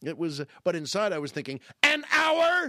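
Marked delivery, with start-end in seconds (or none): 1.8-2.7 high, loud, outraged and disbelieving. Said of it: "I didn't say it that way".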